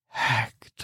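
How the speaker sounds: breathy, hushed whisper very close to ear. Voicing an unseen presence behind a player, whispering in the ear. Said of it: "you hear a voice whispering in your ear".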